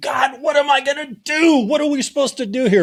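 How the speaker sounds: mock frantic, desperate, very high crying out. Retelling Moses crouched behind a rock: imitating Moses crying out to God. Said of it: "crouched behind a rock saying".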